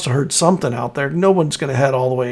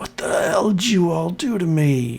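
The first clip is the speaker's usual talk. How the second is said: whole line hissed out, snake-like reptilian voice; 2 semitones higher than usual. Game master voicing a captain coming to, hissing at the players: hissing Brannick Redwake. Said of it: "he sort of hisses at".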